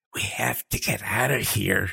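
words hissed out sharply, urgent hiss. She hisses to Liam, glancing back over her shoulder: hissed. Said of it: "she hissed".

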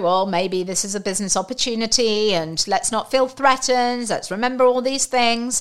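normal talking voice

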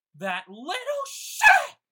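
very loud, very high, shrill female scream. Describing the scene to the group, the narrator voices a woman; screaming female voice. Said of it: "you hear a female voice scream".

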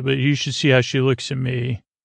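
ordinary delivery

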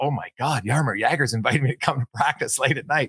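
mock excited, thrilled reaction. Retelling a teammate's reaction to being invited to practice: imitating an excited teammate. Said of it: "He's all excited".

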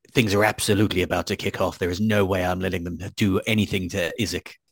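whispered aside. Speaking privately to Adrian and Vlad, whispering. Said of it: "I'm just whispering this to you now".

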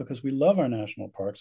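ordinary talk, nothing marked

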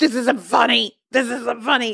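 mock fed-up, angry, unamused father voice. Imitating a dad who gets mad at the show: imitating Chuck being mad. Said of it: "so mad".

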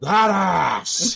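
insane put-on actor voice. Doing an even more insane impression while watching a film: insane Al Pacino impression. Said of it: "I'm gonna do my Al Pacino impression even more insane now".

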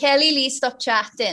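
put-on South Welsh accent. Quoting their English teacher from South Wales, South Welsh accent. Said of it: "he was from South Wales".

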